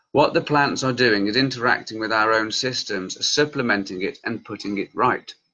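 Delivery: normal talking voice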